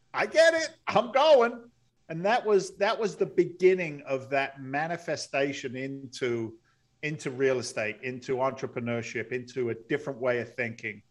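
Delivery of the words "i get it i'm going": high, loud, sudden eager blurt. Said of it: "And I'm like".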